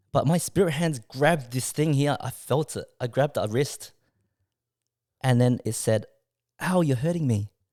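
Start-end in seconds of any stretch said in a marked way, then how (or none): 6.6-7.4 small, cutesy, endearing voice. Retelling what a presence said at night: imitating Wendy's cute voice. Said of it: "in Wendy's voice".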